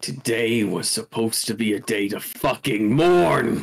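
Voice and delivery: low, throaty, deep guttural growling snarl. Narrating the game, the speaker voices a character's reply: deep guttural growl. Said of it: "he just growls in this deep guttural tone".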